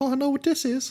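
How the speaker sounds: put-on kid-like character voice, like a little kid. Voicing Rusty waking under a bright light: Rusty's voice. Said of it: "Is that Rusty's voice?".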